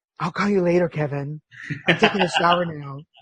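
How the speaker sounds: put-on seductive, teasing, sexy voice. Retelling a text to a guy never met, the speaker reads it in mock sexy voice. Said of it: "it was intended with the sexy voice".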